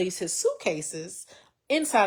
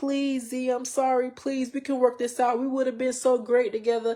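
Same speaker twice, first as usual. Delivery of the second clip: put-on crying, high, tearful begging tone; 5 semitones higher than usual. Retelling how he begged while packing: imitating someone crying and pleading. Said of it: "he's crying and he's pleading".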